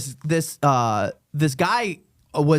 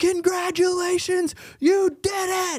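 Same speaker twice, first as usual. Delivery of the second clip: mock, very high, stretched-out holler. Retelling a skydiving recording, the instructor's call to a trainee: imitating someone yelling. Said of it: "You can hear him yelling to the guy".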